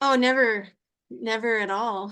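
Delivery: sarcastic, ironic tone. Answering whether racing others ever shows up in their life: sarcastic. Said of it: "You're being sarcastic".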